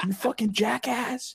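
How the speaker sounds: mock, shrill, very high-pitched screaming. Retelling how a fireman in a truck screamed an insult. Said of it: "he screamed at me".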